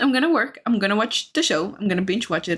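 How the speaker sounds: ordinary delivery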